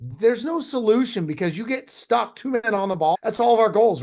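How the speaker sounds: high-pitched, passionate, pushed delivery.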